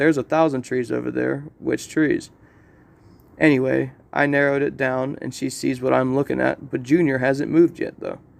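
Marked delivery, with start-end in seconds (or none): none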